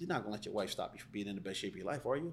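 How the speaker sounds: soft, condescending, dismissive tone. Demonstrating how tone changes the same question, dismissive tone. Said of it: "So I'm being dismissive with that tone".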